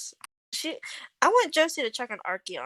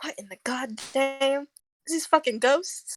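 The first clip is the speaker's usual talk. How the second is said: muttered whisper, higher pitch; 4 semitones higher than usual. Voicing a character who senses an unseen presence: whispering under his breath. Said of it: "he whispers under him".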